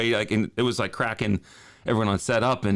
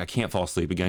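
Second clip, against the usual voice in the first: ordinary talk, nothing marked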